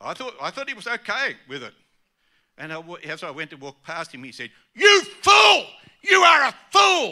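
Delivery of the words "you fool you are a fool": put-on shout, much higher, louder, slower. Recounting how a lecturer shouted at the speaker while walking past, retelling a shout. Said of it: "Like that, shouted out at me".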